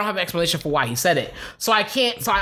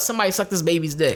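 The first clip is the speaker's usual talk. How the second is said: normal talking voice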